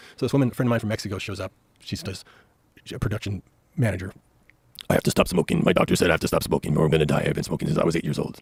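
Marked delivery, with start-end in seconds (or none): 4.9-8.4 put-on impression voice, much lower. Telling a story about a friend, doing her voice: imitating a friend from mexico. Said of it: "That voice is killing".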